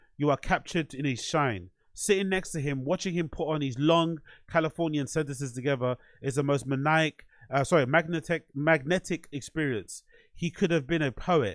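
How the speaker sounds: ordinary delivery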